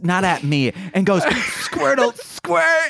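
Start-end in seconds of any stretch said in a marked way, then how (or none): 1.2-2.9 very high, angry, furious voice. Retelling how a friend said a Pokemon line: angry Squirtle voice, imitating Nicole. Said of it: "just gets super pissed, like, in the face".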